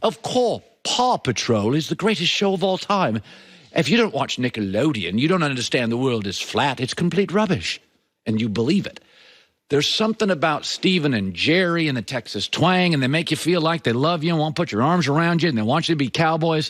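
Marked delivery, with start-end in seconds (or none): 0.0-7.8 put-on smart-sounding British accent. Claiming anything sounds smart that way, the speaker demonstrates a British accent. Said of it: "you can say anything with a British accent".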